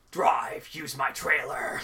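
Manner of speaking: breathy, whispering robot voice. Describing what the character says, the speaker does an Optimus Prime impression. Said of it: "that was actually a pretty good Optimus Prime impression I did there".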